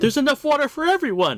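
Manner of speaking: very high, overjoyed cry. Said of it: "like, overjoyed and says".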